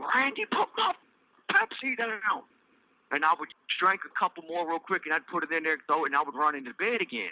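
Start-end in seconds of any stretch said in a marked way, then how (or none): 0.0-2.4 very high-pitched shrieking scream. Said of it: "She would scream at me".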